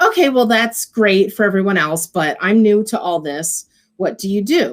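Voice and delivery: put-on calm, unbothered delivery, no heat. Retelling asking a dismissive vendor again: imitating her own calm, smiling reply. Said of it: "I just calmly said, you know, with a smile".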